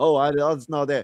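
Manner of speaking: mocking sarcastic tone. Arguing and mimicking the other speaker: imitating a sarcastic remark. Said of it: "all this sarcastic bullshit".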